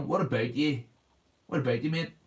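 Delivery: harsh, aggressive Northern Irish accent. Showing how the Northern Irish accent sounds: aggressive Northern Irish accent. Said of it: "It's an aggressive accent".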